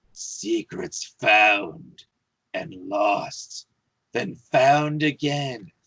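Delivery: raspy, hoarse, croaking voice of an ancient undead creature. Game master voicing a creature speaking to the players: hoarse voice. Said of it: "in a hoarse voice you hear".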